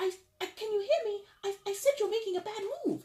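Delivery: tiny, sweet, very high little voice. Voicing the little voice warning Aries of a bad move, small, sweet little voice. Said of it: "I talk with a sweet little little voice".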